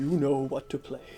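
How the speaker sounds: deep, low, full-chested, resonant, ringing rumble. Describing an imagined scene as older Michael takes the guitar, in a deep resonant Santa Claus voice. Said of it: "you hear the deep resonant voice of Santa Claus".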